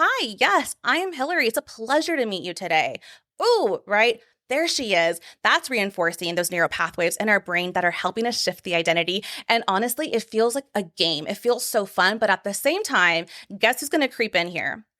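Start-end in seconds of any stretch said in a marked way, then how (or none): 0.0-3.0 confident, unhesitating, pitched-up, animated delivery. Showing how to introduce yourself with confidence: confident louder voice. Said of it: "We're going to speak a little louder".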